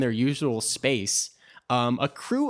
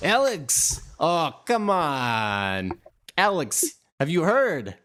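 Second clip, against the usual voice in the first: over-the-top, exaggerated put-on Russian accent, laid on thick; 4 semitones higher than usual. Acting out a character calling to Alex; exaggerated Russian accent. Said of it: "they all have very exaggerated Russian accents".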